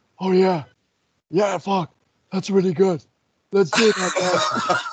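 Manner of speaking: eager, keen, approving tone. Retelling a meeting pitch, imitating Johnny Ace's reply. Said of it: "That's a great impression".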